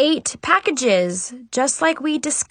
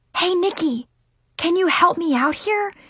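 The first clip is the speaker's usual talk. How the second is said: whispering, higher pitch; 4 semitones higher than usual. Narrator reads a girl nudging the narrator's arm near her uncle, whispered. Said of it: "She whispered".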